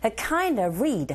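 slow, stressed KIND and REED, rising intonation.

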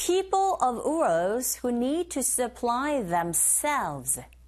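very slow, careful model reading. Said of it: "listening two".

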